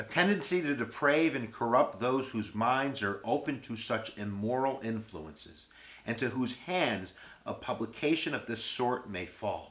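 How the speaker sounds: ordinary talk, nothing marked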